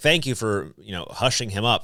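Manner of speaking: ordinary talk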